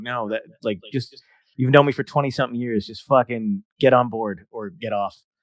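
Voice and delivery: plain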